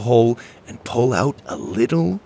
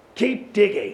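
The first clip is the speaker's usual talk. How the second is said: barked delivery, pitched up; 9 semitones higher than usual. A captain orders the others to keep digging, barking. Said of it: "Captain Drake barked".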